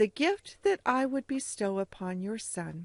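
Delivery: ordinary delivery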